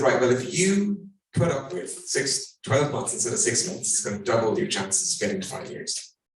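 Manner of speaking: ordinary delivery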